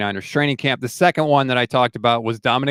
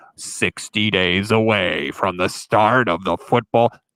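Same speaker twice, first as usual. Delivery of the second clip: deep, slow, big radio-promo announcer delivery; 4 semitones lower than usual. Recalling the radio countdown promos heard all weekend at work, big announcer voice. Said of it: "you'd have the big voice saying".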